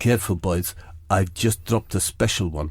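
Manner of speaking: drops into a low put-on voice. Retelling a man stepping out of a cubicle: Josie Marino impression. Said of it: "that's my impression of Josie Marino".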